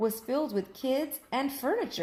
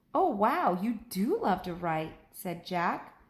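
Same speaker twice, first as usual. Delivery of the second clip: ordinary delivery, nothing marked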